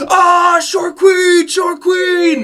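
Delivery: rowdy crew whooping, very high, wild and shrill. Voicing pirates cheering after a drinking contest: pirates cheering wildly. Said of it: "these pirates fucking go crazy".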